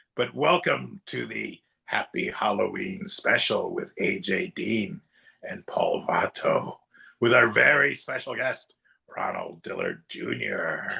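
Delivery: eerie put-on horror-host voice, low and creaky. Asked for a spooky voice to open the Halloween special, spooky voice. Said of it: "Can you give us some kind of spooky voice".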